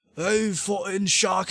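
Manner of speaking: attempted Scottish accent. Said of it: "I can't do a Scottish accent".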